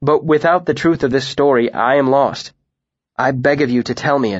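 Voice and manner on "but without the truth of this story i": plain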